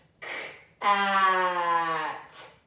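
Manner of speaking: k, then a slow, long stretched "at". Showing how to stretch sounds to hear the hidden word, stretching the sounds out. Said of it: "make them really long so we can hear".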